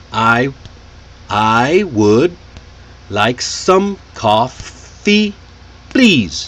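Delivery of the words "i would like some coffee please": stressed words tapped out in a rhythm. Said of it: "clapping or tapping your hand only when you say a stressed word".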